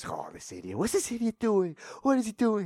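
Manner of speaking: muttered angry cussing under breath, swooping pitch. Retelling how a cousin cussed at another driver, imitating angry cussing. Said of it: "he's getting angry. He's cussing like".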